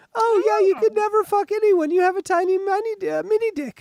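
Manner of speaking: very high, shrill, loud, belittling taunting voice. Showing a trick for insulting someone: voice raised in pitch. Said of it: "just go up with your voice like this".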